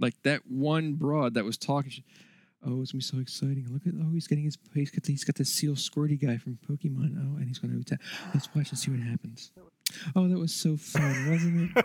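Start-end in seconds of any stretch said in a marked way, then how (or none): 2.7-11.8 drowsy, mild enthusiasm, bland, soothing radio-presenter voice. Mocking a presenter at Nintendo's conference, in a mock NPR-style presenter voice. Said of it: "It was like listening to NPR".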